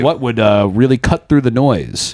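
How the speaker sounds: plain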